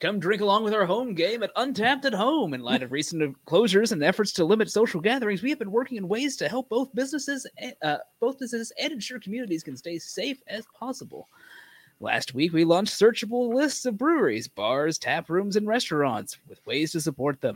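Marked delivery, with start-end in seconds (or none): 2.5-17.6 trailer-style movie phone-line announcer voice. Reading a badge description aloud: Moviefone announcer voice. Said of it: "Next on Movie Phone".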